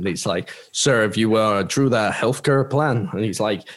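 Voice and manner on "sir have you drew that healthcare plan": put-on American accent. Retelling people questioning him about his plan, in a put-on American accent. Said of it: "this is my American accent".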